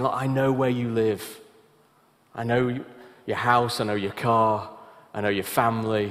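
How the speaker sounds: mock-threatening, acted-out menacing tone. Retelling how a man spoke to Joni: retelling a threatening tone. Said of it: "he was speaking to Joni in a threatening tone".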